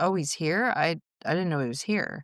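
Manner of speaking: normal talking voice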